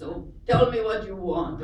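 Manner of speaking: put-on Arabic accent. Retelling what a man said as he entered a quiet room, in an Al Jazeera-style Arabic accent. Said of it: "now I'm talking like I'm from Al Jazeera".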